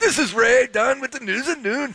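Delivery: very high, bad Jamaican accent drifting into Scottish. News anchor trying to sound Jamaican while introducing the noon news, bad Jamaican accent. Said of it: "You sounded more like you're Scottish than Jamaican".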